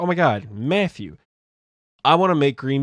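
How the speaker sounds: thrilled, eager, excited, gushing outburst. Retelling how a friend suggested a dish: imitating Sydney sounding excited. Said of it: "never seen her so excited about food".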